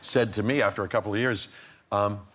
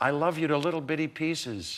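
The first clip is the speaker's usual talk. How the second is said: high, called out as across a street; 5 semitones higher than usual. Retelling what he yelled across the street as she left; retelling a yell. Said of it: "he yelled out across the street".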